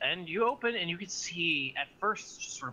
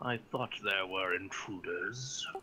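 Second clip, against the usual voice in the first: deep, low bass voice; 5 semitones lower, 4 dB quieter than usual. A creature with eyes on its chest looks at you, deep voice. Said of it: "you hear a deep voice go".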